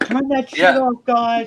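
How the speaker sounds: very high-pitched, very loud, slow shrill griping. Playing a Karen confronting people launching fireworks: mock Karen complaint. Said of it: "went Karen on 'em".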